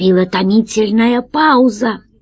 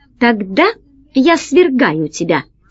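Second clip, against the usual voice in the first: plain reading voice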